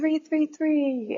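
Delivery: high, slow, drawn-out delivery.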